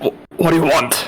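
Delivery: nervous, panicky, stumbling stammer at the start. Voicing a character peeking out a door, panicky and stammering. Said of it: "kinda panicking".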